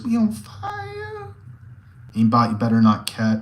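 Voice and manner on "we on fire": very high put-on squeaky squeal, "fire" stretched. Speaker repeats a phrase, in a high-pitched voice. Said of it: "high pitched voice".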